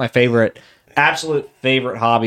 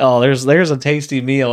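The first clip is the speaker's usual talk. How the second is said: ordinary talk, nothing marked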